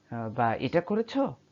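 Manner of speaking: quick, with করেছো rising at the end. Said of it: "by just raising an, uh, raising intonation".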